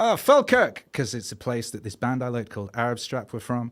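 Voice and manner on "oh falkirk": put-on Scottish accent, very high and very loud. Answering a Scottish woman's question, in a fake Scottish accent. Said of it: "my fake Scottish accent".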